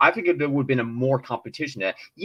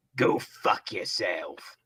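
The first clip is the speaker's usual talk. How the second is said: weak, breathy put-on voice, breathed out softly, half-hearted; 8 semitones lower, 6 dB quieter than usual. Doing a brief impersonation: Wolverine impression. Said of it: "I need to do a bit of impersonation of Wolverine".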